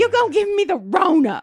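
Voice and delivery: very high, very loud, shrill shrieking. Retelling how a new employee shrieked at a security guard: imitating someone shrieking. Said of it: "started shrieking at me".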